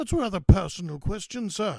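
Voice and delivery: very loud, high, silly sketch-comedy voice. Answering a woman's question, the narrator jokes back in a Monty Python voice. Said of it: "I said in a Monty Python voice".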